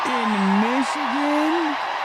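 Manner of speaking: high, slow, stunned incredulous cry of disbelief.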